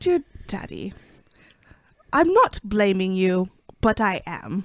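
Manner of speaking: put-on British accent. Pretending to be him and addressing daddy, in a british accent. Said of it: "Why is he British".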